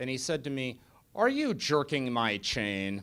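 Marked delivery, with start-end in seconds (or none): 1.1-3.0 deep, sonorous, rolling baritone with swooping pitch. Retelling a question asked over a glass of beer: Archbishop Foley's deep sonorous baritone. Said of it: "deep, sonorous baritone he had".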